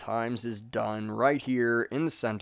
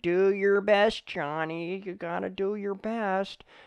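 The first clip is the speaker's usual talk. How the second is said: put-on mock voice, much higher pitch; 10 semitones higher than usual. Encouraging listeners, the speaker briefly imitates a parent talking to Johnny. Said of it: "sound like a, a parent".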